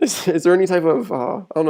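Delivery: halting speech broken up by laughter. Asking a guest about social media, laughing while talking. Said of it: "sorry I'm laughing".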